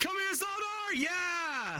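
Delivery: very high, excited whoops and shouts. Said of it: "Sorry, I got a little excited".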